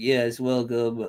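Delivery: put-on nasal voice. Mocking how Chris talks: nasal imitation of Chris. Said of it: "so I've noticed it's the real nasally".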